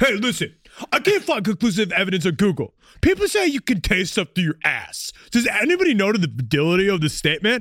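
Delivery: put-on dumb voice. Speaker acting out a man's question: dumb voice. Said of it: "with a dumb voice".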